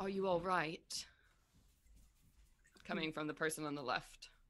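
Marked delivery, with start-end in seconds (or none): 0.0-1.1 put-on poorly done, terrible British accent. Narrator voicing a person on the left calling out, terrible british accent. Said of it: "His terrible British accent".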